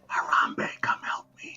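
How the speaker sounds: hushed, quiet whisper. Calling for help from under a blanket in a game: whisper. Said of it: "or whisper".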